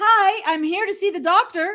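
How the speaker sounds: cheerful, chirpy, bright and high voice. Telling a joke, voicing a blonde who walks into a library: cheerful. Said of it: "cheerfully says".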